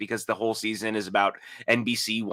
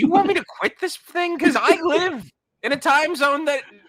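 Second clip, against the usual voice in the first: voice shooting up very high and loud; 5 dB louder than usual. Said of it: "It went real high".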